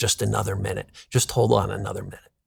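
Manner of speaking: soft, hushed half-whisper, right up close. Retelling words someone half-whispered in the ear: imitating a half-whisper. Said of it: "he whispers in my ear".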